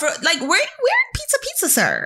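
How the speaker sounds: high, sing-song, mocking, condescending scolding tone.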